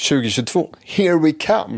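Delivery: very high, loud, eager, expectant cheer. Redoing the podcast's new-year intro after being told to sound more expectant. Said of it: "Du måste ju låta lite mer så förväntans".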